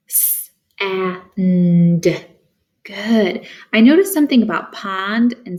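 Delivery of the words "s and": word segmented, first sound split off.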